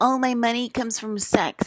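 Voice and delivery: mocking, high, dim-witted airhead voice. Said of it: "you sound like the dumbest people on earth".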